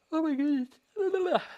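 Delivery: talking through a yawn. Talking to viewers about an appliqued quilt border, speaker yawning. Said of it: "Sorry, I'm yawning".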